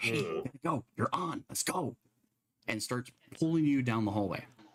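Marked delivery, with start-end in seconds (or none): 0.0-2.0 soft, hushed whisper. Narrating a figure who pulls a character down a hallway: whisper. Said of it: "And you just hear this whisper".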